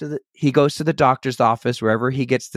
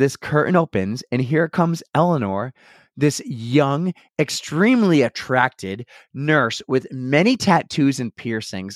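plain

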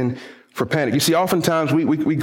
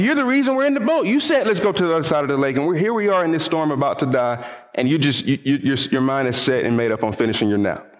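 usual speaking voice

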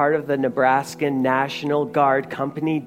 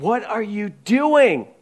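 high, panicked, frantic, alarmed voice; 7 semitones higher, 3 dB louder than usual. Telling a story of two stranded men, acting out one man's frantic panic. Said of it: "frantically is looking at him going".

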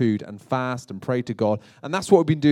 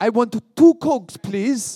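put-on French accent, pitched up; 9 semitones higher, 5 dB louder than usual. Speaker showing how to say things in another language, french accent. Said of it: "say it in a French accent".

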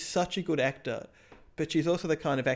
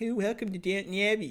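put-on high, ridiculous, weird American-English Mid-Atlantic accent; 6 semitones higher than usual. Mocking an actress's accent in a TV show: Elizabeth McGovern's ridiculous accent. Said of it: "ridiculous accent".

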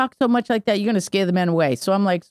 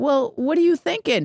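talking through laughter, pitched up; 7 semitones higher than usual. Retelling his own reply to younger men he heard complaining, retelling a laughing reply. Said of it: "And I'm laughing".

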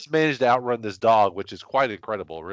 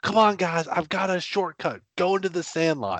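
mock excited holler, raised and pitched up; 9 semitones higher than usual. Retelling how Squint yells at the screen near the race's end: imitating Squint yelling. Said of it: "literally yells at the screen".

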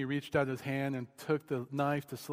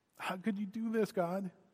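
acted-out, frustrated, angry yelling; 6 semitones higher than usual. Recounting getting angry with god, retelling yelling at god. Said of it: "just started just yelling at him".

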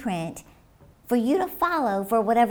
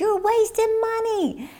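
mock shout, pitched very high; 11 semitones higher than usual. Speaker retells what a man told him, imitating him shouting. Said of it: "And then he shouted".

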